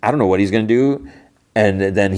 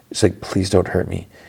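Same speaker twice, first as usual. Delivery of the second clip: imitated soft whisper. Speaker acts out a woman's line from a story, retelling a whisper. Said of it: "she kind of whispers".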